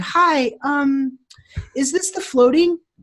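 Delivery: put-on high, slow, cute little-girl voice. Retelling a phone call from a little girl, in her cute little voice. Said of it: "this cute little voice".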